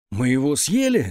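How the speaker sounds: ordinary delivery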